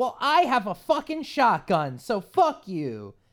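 high, loud, defiant yell. Retelling a shouted standoff, the speaker yells back in retaliation. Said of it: "and I yell in retaliation".

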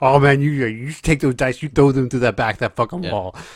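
put-on taunting voice. Retelling how craps dealers talk to players, imitating dealers talking trash. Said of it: "They're all, like, talking mess and shit".

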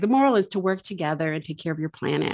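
prim, strait-laced schoolteacher lecturing tone. Summing up a story's moral, the speaker uses a school marm voice. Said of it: "What kind of accent was that? Like the school marm voice".

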